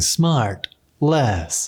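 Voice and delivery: robot-y, robotic announcer voice. Imitating the intro of the Smartless podcast: robot-y Smartless podcast voice. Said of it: "that kind of robot-y voice saying".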